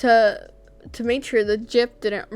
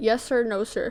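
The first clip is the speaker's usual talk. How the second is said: normal talking voice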